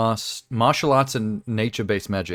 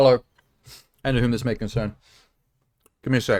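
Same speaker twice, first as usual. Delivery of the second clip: talking with mouth full, chewing. Starting a stream with chocolate still in the mouth: talking with mouth full. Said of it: "I have a chocolate in my mouth".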